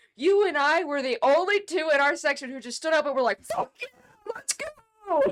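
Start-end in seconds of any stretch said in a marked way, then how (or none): 3.4-5.2 very high, drawn-out, jubilant excited scream. Recalling watching the shot go in, the speaker reenacts their cheer in the stands.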